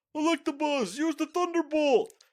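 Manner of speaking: very loud, very high battle-yell shout. Describing an anime episode, the speaker imitates the trainer yelling a command. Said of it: "the trainer yells".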